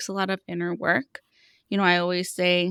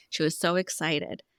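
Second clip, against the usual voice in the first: plain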